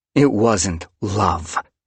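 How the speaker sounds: growled, growling delivery. Squirrelflight answers a nervous cat, growled. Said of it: "Squirrelflight growled".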